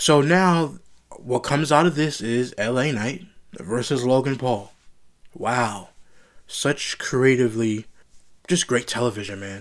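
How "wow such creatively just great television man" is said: mock praise, dripping with sarcasm. Reviewing a wrestling match announcement: sarcastic. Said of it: "I'm being sarcastic".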